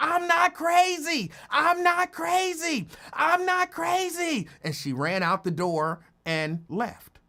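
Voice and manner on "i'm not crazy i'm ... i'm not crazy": shrill, very high, drawn-out screaming. Retelling how a woman ran out of the building: imitating someone screaming. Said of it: "she was screaming".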